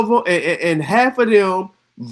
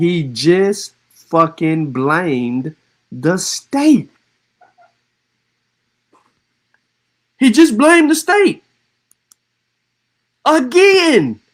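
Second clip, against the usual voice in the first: slow, measured, spelled-out delivery. Commentator reacting to a clip he can rewind, speaking slowly. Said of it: "I'm gonna say it slow".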